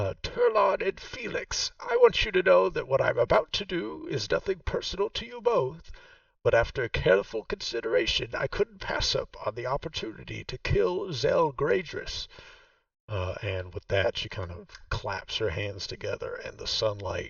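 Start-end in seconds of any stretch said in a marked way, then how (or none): 0.2-12.3 very high-pitched, ringing shouted voice. Voicing a character who speaks to two others: yelling. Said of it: "she yells out".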